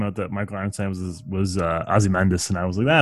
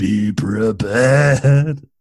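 raised, grand, booming godlike voice; 5 dB louder than usual. Describing an actor's interesting voice, doing a Jeremy Irons voice. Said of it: "God's voice or something".

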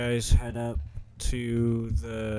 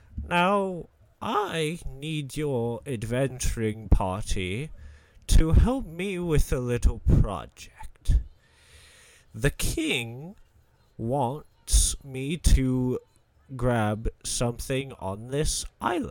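put-on elderly man's old wizard character voice; 3 semitones higher than usual. A game master voices an old man character to the players' party, old wizard voice. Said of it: "old man in, uh, in wizard robes".

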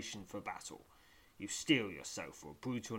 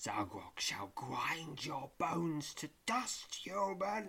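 high, sibilant, hissing skeleton voice; 6 semitones higher than usual. A hooded skeleton threatens a human in a passage: hissing skeleton voice. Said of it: "hisses the skeleton".

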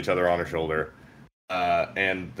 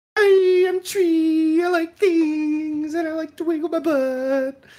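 puppet-like character voice; 3 dB louder than usual. Speaker calls this a perfect impression of her voice: Tree impression. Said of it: "this is a perfect impression of her voice".

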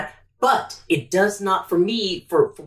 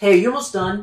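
hostile, aggressive, pushy confrontational tone; 2 semitones higher, 4 dB louder than usual. Role-playing a work buddy asking a coworker if they're almost done, in an aggressive tone. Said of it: "In that aggressive tone".

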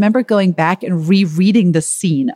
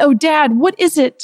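high, eager, insistent crying out; 9 semitones higher than usual. The children urge their father to share his idea, crying out. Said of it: "They cried".

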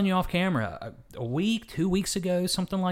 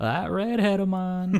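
put-on Southern preacher accent; 2 semitones higher than usual. Recalling how a late man always spoke of his redheaded wife, in Southern Baptist preacher voice. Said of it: "So he'd always say".

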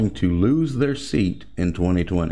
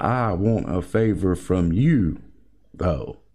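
break before a stressed though; 2 semitones lower than usual. Quoting a line from a transcript: pause before stressed 'though'. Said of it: "You see how they pause in between you and though? They pause in between there to put emphasis on though".

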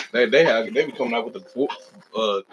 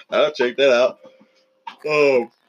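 loud words dragged through a yawn; 2 semitones higher, 5 dB louder than usual. Speaking to an audience about upcoming anime, yawning while talking. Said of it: "Sorry I'm yawning on y'all".

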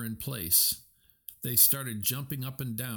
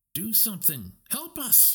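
very high pitched, swooping, urgent, pressing; 10 semitones higher than usual. Moana, seeing catapults loaded with spears, turns to the ocean, urging. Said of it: "She urged".

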